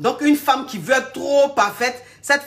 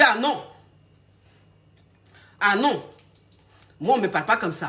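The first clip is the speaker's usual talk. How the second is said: firm, stern, strict, no-nonsense tone; 2 semitones lower than usual. Acting out a strict woman shutting down a man's teasing: imitating a strict woman refusing. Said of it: "Tu dis".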